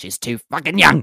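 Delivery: exasperated, fed-up outburst in a put-on voice. Doing the Anna impression again on request. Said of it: "Do that again".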